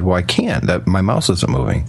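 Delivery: plain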